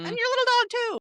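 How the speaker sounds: put-on very high-pitched storybook wicked witch voice. Retelling a story about a dog, in a Wicked Witch impression. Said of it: "Wizard of Oz, like, Wicked Witch".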